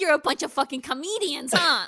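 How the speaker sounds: put-on very broad New York accent. Quoting a bartender from an episode, in a thick New York accent. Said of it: "the most New York-ass New Yorker to ever exist".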